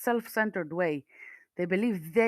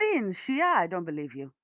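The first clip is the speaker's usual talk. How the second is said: ordinary talk, nothing marked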